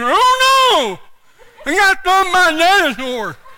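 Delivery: put-on slurred, mushy, childlike mumble, put on. Like someone acting out their own clumsy explanation to puzzled coworkers, every word mangled by a frozen tongue. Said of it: "I was kind of talking like this".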